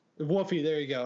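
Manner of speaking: ordinary talk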